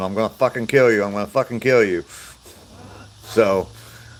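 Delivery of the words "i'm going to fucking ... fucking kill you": ordinary talk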